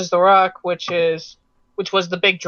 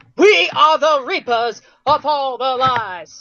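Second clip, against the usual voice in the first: very slow, high Southern preacher voice; 7 semitones higher than usual. Telling someone to push the voice further, showing a Southern Baptist voice. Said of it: "I want to say Southern Southern Baptist".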